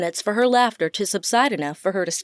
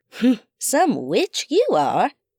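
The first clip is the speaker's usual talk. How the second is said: witch-like cackle through the words, jeering. A woman speaks to the narrator and Ray after sniffing a bottle, cackling. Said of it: "she cackled".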